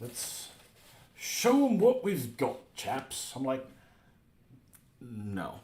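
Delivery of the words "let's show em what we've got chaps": very high, slow, measured British ship announcer voice. Imitating the British ship voice from World of Warships: British accent. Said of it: "the voice on the ship does when I'm playing World of, um, Warships and I'm playing a British tank".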